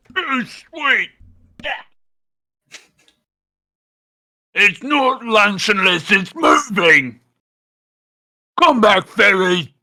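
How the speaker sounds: troll voice, broken English. Game master voices a troll after a fairy throws a tart into its mouth; hungry troll, simple broken speech. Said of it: "rolled really high for the troll too, / [name] always hungry. What say, Tart? Lemon? Uh, yes, this, this is a lemon tart. Come, give Tart. / Will be good tribute for rest to cross".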